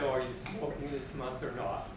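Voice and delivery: ordinary delivery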